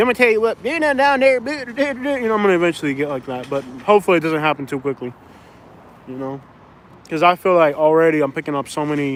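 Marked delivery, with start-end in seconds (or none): 0.0-2.3 put-on rural country accent, pitched up. Speaker imagines how they will eventually talk, in a country accent. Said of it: "am I picking up a country accent?".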